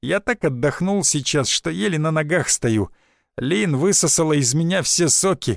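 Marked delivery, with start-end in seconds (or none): none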